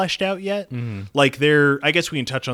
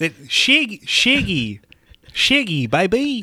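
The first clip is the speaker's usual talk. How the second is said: slow, high, drawled New Zealand accent; 8 semitones higher than usual. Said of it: "that's not too bad".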